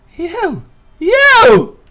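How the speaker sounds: put-on very high, very loud, shrill swooping old woman's shriek. Narrating a scene, voicing a shrieking old woman. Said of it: "she just shrieks like that".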